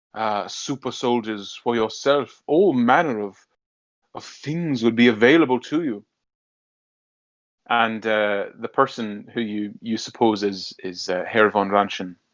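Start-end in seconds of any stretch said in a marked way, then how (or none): 0.2-6.1 oily, greasy, bowing-and-scraping obsequious fawning tone. A character offers super soldiers from the boss's store: greasy obsequious tone. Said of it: "his greasy, sort of uh, obsequious tone".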